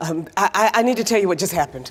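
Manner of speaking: shaken up. Telling Vince what just happened after being threatened, shaken up. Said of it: "I'm shaken up".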